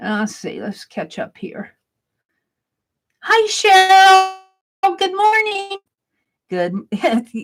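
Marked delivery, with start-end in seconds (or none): 3.2-5.8 very drawn-out, slow, loud yell. Greeting a viewer from across the country: yelling a greeting. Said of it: "Like I'm yelling to Cheryl".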